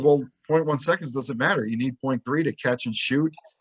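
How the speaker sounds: ordinary talk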